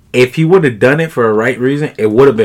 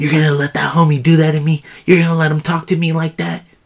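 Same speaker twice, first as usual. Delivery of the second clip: imitated feminine whisper, pitched higher; 4 semitones higher than usual. Imagining what a woman whispered to a man after rolling her eyes; imitating a whisper. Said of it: "she probably whispered to him".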